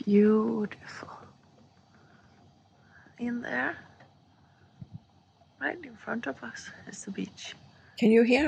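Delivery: hushed, soft whisper. Filming the beach in the morning, not wanting to disturb the peace, whispering. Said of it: "I'm kind of whispering".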